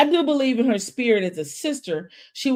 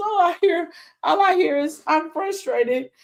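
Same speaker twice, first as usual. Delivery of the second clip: put-on, high, overcome, welling-up emotional cry; 7 semitones higher than usual. Retelling how Marcel got emotional as music played: imitating Marcel getting emotional. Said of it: "music starts playing and he gets emotional".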